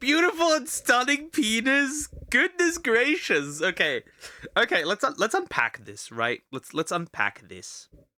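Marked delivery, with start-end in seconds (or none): 0.0-2.1 mocking repeated phrasing. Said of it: "Why do you say it like that?".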